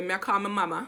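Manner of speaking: Jamaican patois accent. Showing how a phrase sounds when calling one's mom: Jamaican accent. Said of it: "when my accent, when I call my mom".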